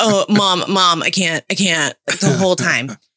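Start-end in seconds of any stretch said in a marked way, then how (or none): 0.0-2.0 put-on angry complaining groan. Retelling how the eldest daughter reacted to the movie: imitating daughter's angry complaining. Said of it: "she gets so angry".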